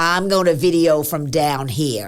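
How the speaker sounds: put-on heavy, full-on, loud, big American accent. Retelling Rob refusing to go up in the stadium: big American accent. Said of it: "said in his big American accent".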